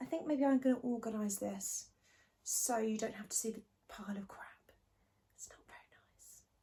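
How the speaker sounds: speaking in a whisper. A vlogger talks to viewers from a new filming spot, whispering. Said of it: "I don't know why I'm whispering".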